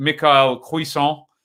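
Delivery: put-on French accent. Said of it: "in my lovely cod French accent there".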